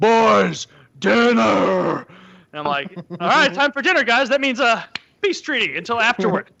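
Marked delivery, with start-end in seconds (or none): 0.0-2.0 very deep, loud, bass-voiced call. Retelling a friend's dad calling the boys to dinner, imitating a very deep voice. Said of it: "has the deepest voice of any adult man".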